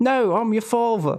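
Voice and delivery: very high-pitched Cockney accent. Speaker imagines a different voice for a famous movie line: Darth Vader with a Cockney accent. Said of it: "Darth Vader with a Cockney accent".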